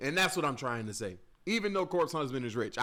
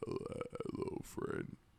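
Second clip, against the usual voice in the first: breathy near-whisper breathed out; 12 dB quieter than usual. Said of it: "y'all like my [name] voice though?".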